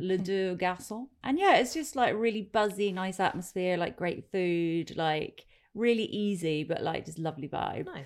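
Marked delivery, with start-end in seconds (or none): 0.0-1.1 bad, overdone, put-on French accent. Recommending a Crouch End French bistro, naming it in a terrible French accent. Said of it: "It's going to be a terrible French accent".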